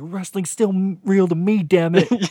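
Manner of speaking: put-on, mock crying in a man's voice. Acting out a disappointed wrestling fan, imitating a man crying. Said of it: "And he's crying".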